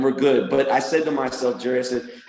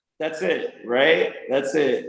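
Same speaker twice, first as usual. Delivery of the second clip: ordinary delivery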